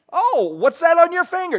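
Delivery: high, loud, eager begging voice.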